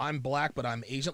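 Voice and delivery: ordinary talk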